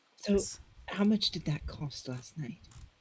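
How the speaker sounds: hushed whisper. In a role-play, a character quietly asks the butler a question, whispering. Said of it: "I'm whispering to the butler".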